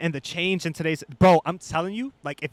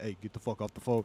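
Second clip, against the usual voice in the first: very low, very quiet, hushed put-on bass voice; 7 semitones lower, 10 dB quieter than usual. Speaker retelling hopping on the phone while an older sister talked, in a put-on deep voice. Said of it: "make my voice deep".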